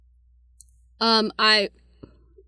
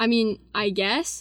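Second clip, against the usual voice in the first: plain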